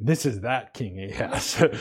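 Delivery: bitter distaste, disgusted, sour tone. Reading a phrase about a king aloud, disgusted tone. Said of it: "you kind of have to say it with like disgust in your tone".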